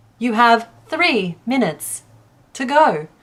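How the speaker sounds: slow, mechanical, automated assistant-style robot voice. Explaining a game's voice feature, speaker demos it in the automated Alexa voice. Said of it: "that's my best impression of the tone anyway".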